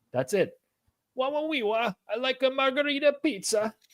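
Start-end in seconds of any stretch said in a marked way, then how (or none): 1.2-3.8 very high-pitched put-on voice. Imitating a friend who always orders margherita pizza: Borat voice. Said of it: "I don't know why I made him sound like Borat".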